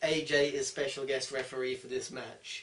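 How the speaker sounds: normal talking voice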